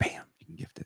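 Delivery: soft, high-pitched whisper.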